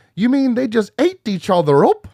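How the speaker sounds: high, cereal-ad-style leprechaun voice. Quoting a favorite movie line in a Lucky Charms leprechaun voice. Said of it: "Why you sound like you're gonna sell Lucky Charms".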